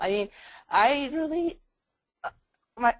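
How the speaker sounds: voice breaking. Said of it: "my voice broke".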